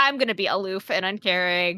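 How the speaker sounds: normal talking voice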